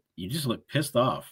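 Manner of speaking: ordinary delivery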